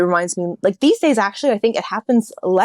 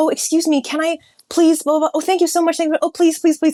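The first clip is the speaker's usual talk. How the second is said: acted, high, gushing, effusively overpolite voice; 9 semitones higher than usual. Imitating a sister being effusively polite to people: imitating sister's effusive politeness. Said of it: "she'll be like".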